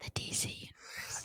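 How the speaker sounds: barely voiced, faint, very quiet whisper. Answering a question about a film universe: whispering. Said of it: "You can say it instead of whispering".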